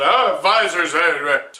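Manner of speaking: loud, slow, big, booming put-on voice. Introducing the topic of visors, Don Cherry impression. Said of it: "This is where the Don Cherry impression comes in".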